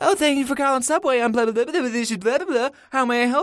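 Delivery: dumb-sounding voice. Retelling a phone call, the speaker mocks the worker who answered: mocking a stupid phone voice. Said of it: "Someone picks up with their stupid voice".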